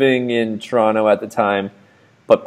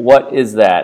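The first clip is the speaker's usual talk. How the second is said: put-on totally matter-of-fact voice. Retelling a friend asking what the strange fog was: imitating a matter-of-fact voice. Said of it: "in as matter of fact of a voice as you could say".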